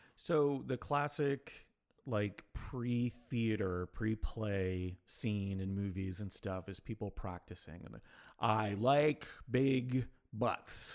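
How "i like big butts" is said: very slow, stretched-out mouth-stretching warm-up delivery. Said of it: "stretching their mouth out".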